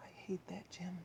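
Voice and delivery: very soft, hushed, quiet whisper. Asked to use a quiet voice in school, the narrator answers: quiet voice. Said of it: "I said in my quiet voice".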